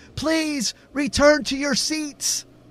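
very high, stretched-out, drawn-out yell. A woman turns back toward the stage and addresses the crowd, yelling. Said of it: "she yelled".

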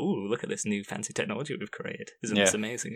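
usual speaking voice

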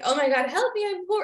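tongue-in-cheek lament. Retelling what they would say after a big expense: retelling a joking complaint. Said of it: "Like jokingly".

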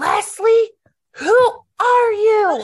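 very loud, very high, slow, drawn-out yell. Retelling a story where a husband yelled down a hill: imitating a husband yelling.

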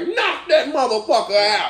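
high, laughing, tough dad voice. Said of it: "daddy is like".

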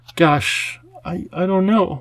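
very slow, unsure hesitation. Narrator voicing Lindy as she answers an offer: hesitant. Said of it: "Lindy was hesitant".

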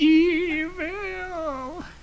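very high, drawn-out, stretched-long cartoon yell. Imitating a cartoon character yelling the word: Mermaid Man yelling voice. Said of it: "Sounds like Mermaid Man when he is yelling evil".

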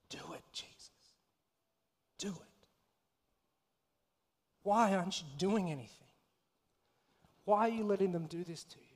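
acted whisper under breath. Acting out what Mary might whisper while watching Jesus die: imitating whispering under her breath. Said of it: "whispering almost the very same thing under her breath".

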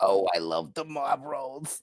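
loud, slow put-on elderly man voice. Imitating an old chain-smoking character's voice. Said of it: "that's the best that I can get my voice".

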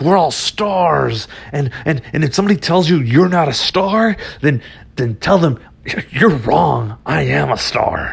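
spat through gritted teeth, rant, "stars" drawn out. Speaker retelling what a guy told the group: imitating clenched-teeth, spitting talk. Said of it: "he was talking through like clenched teeth and spit".

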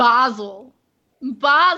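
put-on British accent. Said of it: "say it with an English accent".

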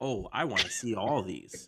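ordinary delivery

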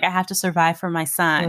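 ordinary talk, nothing marked

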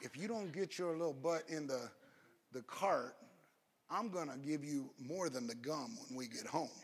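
very quiet, low, half-whispered voice. Retelling a mother leaning down to her child who wants gum, imitating a half-whispered threat. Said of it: "leans down and whispers a little threat".

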